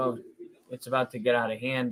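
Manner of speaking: plain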